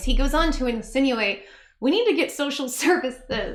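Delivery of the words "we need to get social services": giggling and laughing through the words. Quoting a line called absurd and evil, laughing while talking. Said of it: "I'm sorry I'm laughing".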